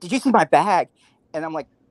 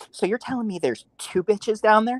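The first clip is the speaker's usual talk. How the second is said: high, showy, flamboyant man's voice; 5 semitones higher than usual. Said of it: "flares his hand all fl-, flamboyant".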